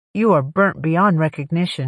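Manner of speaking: ordinary delivery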